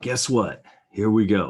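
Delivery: big, loud broadcast announcer voice. Wrapping up a market recap, then breaking into an announcer voice. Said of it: "my uh, announcer voice from the wild side".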